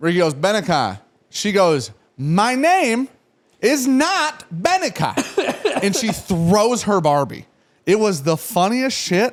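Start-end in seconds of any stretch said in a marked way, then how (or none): 2.2-5.8 put-on tiny, very high, drawn-out little-kid yell. Retelling a four-year-old's outburst in public, imitating a tiny child yelling. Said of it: "this tiny voice yell that".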